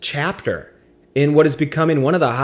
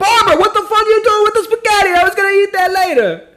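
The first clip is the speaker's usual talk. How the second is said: put-on Italian accent, very high pitch; 5 dB louder than usual. Speaker retelling what others shouted at a nurse who threw spaghetti, Italian accent. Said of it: "a such a good Italian accent".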